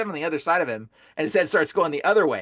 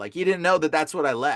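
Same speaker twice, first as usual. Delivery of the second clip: normal talking voice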